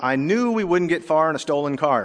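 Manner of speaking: ordinary delivery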